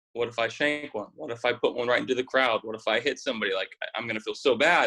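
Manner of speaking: ordinary talk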